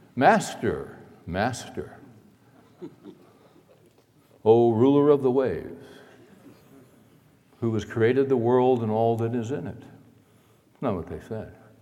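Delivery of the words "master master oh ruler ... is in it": put-on calm, composed, serene, rational voice. Ironically retelling what they said when they woke Jesus, mock calm, serene voice. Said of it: "in a very calm and rational and serene voice".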